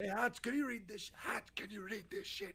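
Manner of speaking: whispered speech. Asking another player to read runes on a ring: whispering. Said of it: "I'm whispering".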